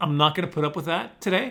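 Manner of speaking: usual speaking voice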